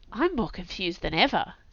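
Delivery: murmuring. Narrator reads Ziggy's reply to another character, murmured. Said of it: "Ziggy murmured".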